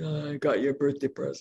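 put-on, really deep voice. A mother retells her son insisting he has her birthday present, imitating his really deep voice. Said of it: "really deep voice".

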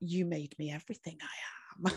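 slow, mock cheeky, pointed, sassy delivery with attitude. Retelling what she said after being called out: imitating a sassy retort. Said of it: "she got really sassy and she went".

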